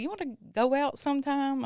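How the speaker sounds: put-on country accent. Retelling a man asking the speaker out on the phone, imitating a country accent. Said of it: "He sounded so country".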